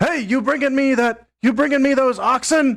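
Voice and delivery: high yelling, projected as if to someone distant. Voicing a deity who turns and yells at someone behind him: yelling at someone in background. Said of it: "yells, yells at".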